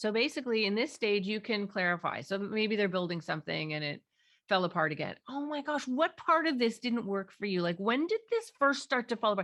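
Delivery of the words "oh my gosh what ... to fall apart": urgent, keen, pressing, pitched-up concerned tone. Showing how they ask when something fell apart, in an urgent tone. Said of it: "there's urgency in my voice, but it's not about me".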